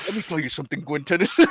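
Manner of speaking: half-whispered, hushed, under the breath. Retelling a cartoon scene with a phone call: half-whispering as Rath.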